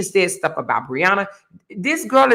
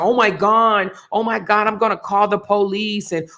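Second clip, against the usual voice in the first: mock tearful whining, fake whiny crying voice. Mocking people who play the victim: mock whining and crying. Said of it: "whining and crying and say".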